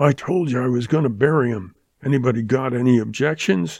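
savage, fierce, defiant delivery. Danny whirls around to answer Borkman: spoken savagely. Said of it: "Danny whirled and spoke savagely".

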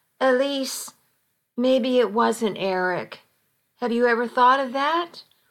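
ordinary delivery, nothing marked

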